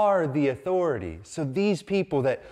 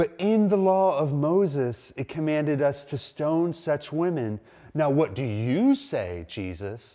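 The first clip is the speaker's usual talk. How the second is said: plain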